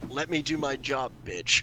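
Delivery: very quiet, hushed, in-charge commanding voice. Voicing a character ordering a servant away, with commanding presence. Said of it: "I'm doing the commanding presence of".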